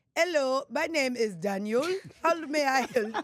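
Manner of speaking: slow, put-on Indian accent. Imitating a customer service agent answering a call: put-on Indian accent. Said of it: "What accent is that?".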